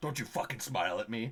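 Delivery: low curse muttered under the breath. Retelling what a man passing by said: imitating a loud muttered curse. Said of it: "really loudly, but still under his breath".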